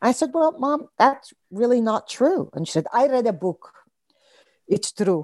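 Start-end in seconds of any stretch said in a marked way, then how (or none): 2.9-5.2 put-on accent from Israel. Retelling what Mom answered back, imitating her thick Israeli accent. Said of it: "within her very thick Israeli accent".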